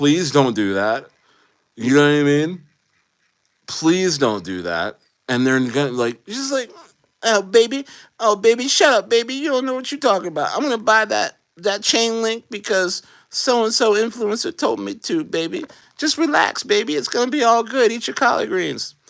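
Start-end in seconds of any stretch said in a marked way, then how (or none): 7.2-18.9 very high, doting grandmother voice. Imagining a grandma brushing off crypto warnings: imitating grandma. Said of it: "That's gonna be my grandma".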